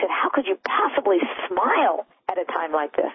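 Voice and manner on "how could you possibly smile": heated, angry, accusing tone. Retelling how she answered a smiling man: imitating an angry question. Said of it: "she got really angry".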